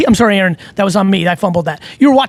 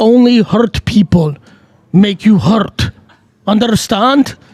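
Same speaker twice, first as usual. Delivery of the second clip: fake, put-on Russian accent. Joking about doing all content in an accent: put-on Russian accent. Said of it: "I might go Russian accent for a decade".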